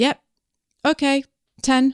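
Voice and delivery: choppy broken English. Retelling booking a massage time with a man, imitating broken English. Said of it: "like this".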